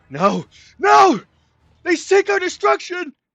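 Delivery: very loud, very high shout. A character whose mind is filled with another's horrible words, yelling out. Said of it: "He yells out".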